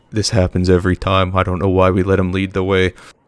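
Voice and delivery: hushed whisper. Narrator voicing a group of commoners traveling with the players, whispering.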